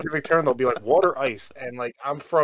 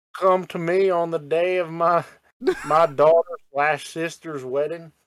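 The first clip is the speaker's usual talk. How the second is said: put-on Southern US accent; 4 semitones higher than usual. Misquoting a famous gangster-movie line, slipping into a southern accent. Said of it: "you just went southern with that shit".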